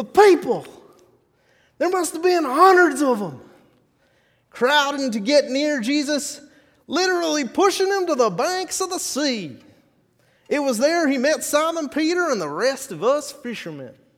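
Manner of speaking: put-on high, loud old-timey frontier drawl. Narrating as one of the fishermen who met Jesus, old-timey Wild West varmint voice. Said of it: "did I just hear an old-timey Wild West varmint voice?".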